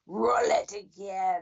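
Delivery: dark, sinister, menacing, villainous emperor voice. Retelling an actor's line on stage after a teaser, in a Palpatine voice. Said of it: "in his Palpatine voice said".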